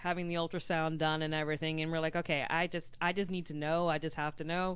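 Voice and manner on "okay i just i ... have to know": plain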